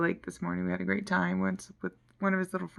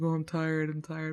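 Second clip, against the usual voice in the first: imitated Nigerian accent; 2 semitones lower than usual. Retelling what the man said when she called him: imitating a Nigerian accent. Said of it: "it sounds like he's on another planet with a Nigerian accent".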